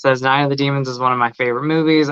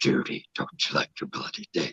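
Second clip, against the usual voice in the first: whispered demon voice; 11 semitones lower, 11 dB quieter than usual. Quoting a movie line after a request for the demon voice: Night of the Demons demon voice. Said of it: "and then Demon Voice, I know".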